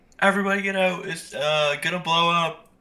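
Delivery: ordinary delivery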